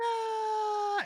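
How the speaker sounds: high little creature scream, squealing.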